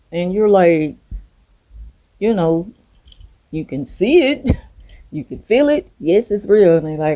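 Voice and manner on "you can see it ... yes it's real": high, snide, sarcastic tone. Acting out a reply to a narcissist about a necklace: imitating a sarcastic reply. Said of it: "you could be sarcastic with the narc".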